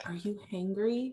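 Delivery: hushed, caring, gentle, soft half-whisper. Retelling what he half-whispered to her at the track: imitating a gentle half-whisper. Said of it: "it was such a gentle whisper".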